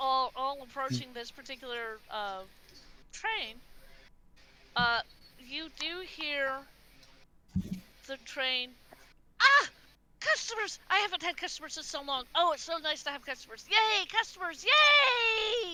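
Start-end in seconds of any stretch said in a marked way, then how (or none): 9.4-15.7 cheerful happy robot voice, higher. Voicing the train greeting approaching customers: cheerful medical robot voice. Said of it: "Kind of like the same voice that you heard from a certain medical robot".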